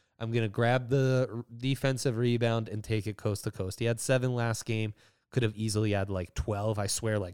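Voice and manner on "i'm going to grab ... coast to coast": normal talking voice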